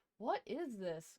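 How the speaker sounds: growling bear voice. Narrator reading a story where the bear finds goblins in his cave: growling bear voice. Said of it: "growled the bear".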